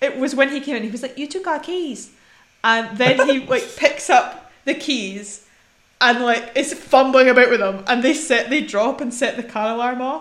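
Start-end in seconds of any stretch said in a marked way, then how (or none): 1.2-2.1 put-on New Zealand accent, higher pitch, quieter volume. Retelling what he said when he came in, in a Taika Waititi accent. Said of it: "Taika Waititi accent there".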